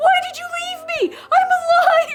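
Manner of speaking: very high-pitched, loud, desperate scream.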